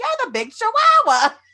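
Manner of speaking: put-on very high elderly grandmother voice.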